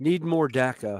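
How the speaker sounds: ordinary delivery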